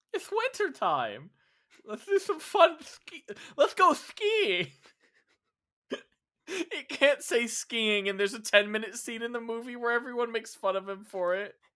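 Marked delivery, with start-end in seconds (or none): 0.1-4.6 high cartoon voice bouncing all over the pitch. Riffing on a made-up winter character with another speaker, in a King Candy style voice. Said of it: "this the King Candy style voice".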